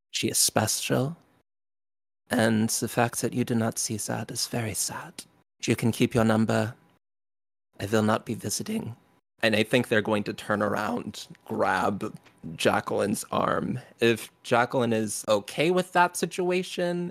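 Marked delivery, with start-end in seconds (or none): 0.1-8.9 solemn, heavy, somber, grave delivery. Voicing a character who stands between two others: somber, quiet tone. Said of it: "in a very somber, quiet tone".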